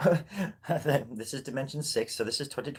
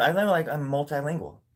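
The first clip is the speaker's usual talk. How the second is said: usual speaking voice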